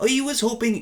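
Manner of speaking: put-on slipping into Irish accent. Trying a british voice for a line, accidentally slipping into an irish accent. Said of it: "That's Irish".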